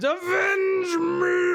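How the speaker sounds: very high, loud monster cry of pain. Voicing a creature as it dies: monster howling in pain. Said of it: "howls in pain and says".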